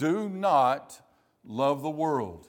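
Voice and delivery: heavy emphatic stress on the words do not. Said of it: "says very emphatically".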